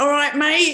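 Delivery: put-on high, loud Aussie accent. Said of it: "I can do that Aussie stuff".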